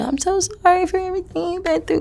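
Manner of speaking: very high, blubbering, weepy crying voice. Complaining about a mother's phone calls, imitating someone crying.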